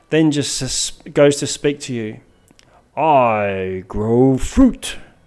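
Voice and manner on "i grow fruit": put-on young tree creature voice, "I" drawn out. Voicing a treant sapling who smiles and speaks to the players: speaking as a treant sapling. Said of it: "treant sapling looks down at you, smiles benevolently".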